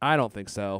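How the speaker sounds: firm, emphatic "no" with stress on "I".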